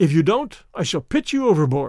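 ordinary talk

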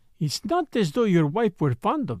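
ordinary delivery

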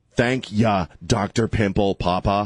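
put-on New York accent. Retelling thanking the doctor after treatment: New York accent. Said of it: "I went into my New York voice".

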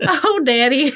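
put-on high Southern accent, drawl on "daddy". Imitating own teenage self answering a dad: southern accent. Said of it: "Me with my Southern accent".

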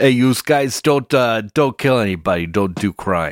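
put-on gruff working-man voice. Joining the bit about saying the lesson: put-on dock worker voice. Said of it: "like a dock worker".

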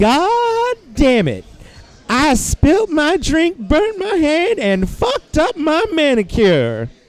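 very high, screeching, swooping Southern drawl. Retelling the voice heard when the bar went up in flames: high-pitched screeching southern drawl. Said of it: "in this high-pitched, screeching southern drawl".

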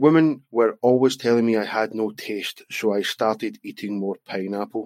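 ordinary delivery

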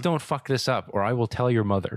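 mock yelling, loud put-on yell. Describing a single dad character in a game, imitating him yelling at his son. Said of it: "he's yelling at his kid".

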